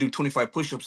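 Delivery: ordinary talk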